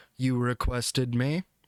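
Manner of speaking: low, mechanical, machine-like robotic voice. Narrator voices a small device clicking to life in a creature's chest, robotic voice. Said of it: "in a very robotic voice says".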